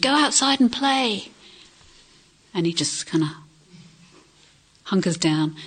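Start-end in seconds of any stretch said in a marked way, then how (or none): 0.0-1.3 put-on, high, loud, far-carrying shout. Retelling a cartoon where the mum calls from the kitchen: imitating a mum shouting. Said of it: "his mum shouts from the kitchen".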